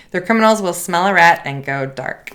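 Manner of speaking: normal talking voice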